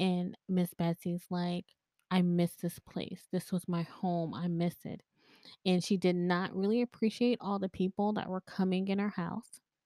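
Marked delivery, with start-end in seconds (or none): 2.1-5.0 put-on crying, tearful voice. Retelling a friend channeling a spirit outside the house: imitating someone crying. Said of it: "and she's crying".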